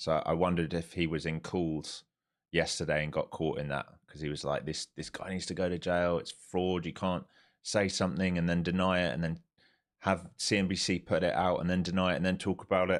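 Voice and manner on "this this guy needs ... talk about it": usual speaking voice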